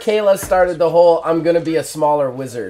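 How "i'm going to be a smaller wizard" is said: ordinary talk, nothing marked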